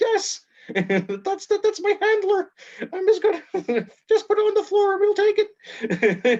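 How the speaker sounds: very high, squeaky little puppet voice. Telling a story about talking with a puppet at the door, in a squeaky puppet voice. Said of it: "this squeaky voice".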